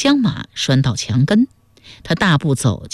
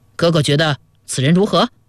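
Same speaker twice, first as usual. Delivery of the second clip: ordinary delivery, nothing marked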